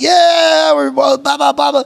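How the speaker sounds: rowdy, excited yelling.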